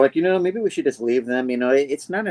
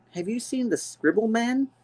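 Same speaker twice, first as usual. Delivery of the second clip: put-on very high, scared small child voice; 10 semitones higher, 5 dB quieter than usual. Retelling a scene where men barge into a cabin with two kids; imitating a scared kid. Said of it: "they're scared".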